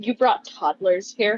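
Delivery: confidential, mild, hushed tone, lightly played. Acting out walking up to a character in a scene: very hushed tone. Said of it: "in a very hushed tone".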